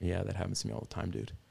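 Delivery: gentle whisper. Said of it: "I heard the Lord kinda whispering".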